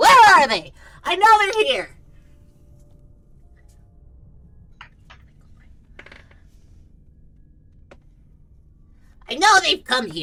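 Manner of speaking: very loud, shrill goblin voice hollering. Voicing a goblin demanding answers from the bartender: goblin yelling at the bartender. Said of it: "yelling at the bartender".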